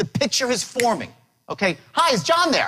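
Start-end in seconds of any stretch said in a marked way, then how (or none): 1.9-2.7 enthusiastic, upbeat, excited, raised pitch. Speaker demonstrating how to open a phone call: excited, upbeat. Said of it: "I'm excited, I'm upbeat".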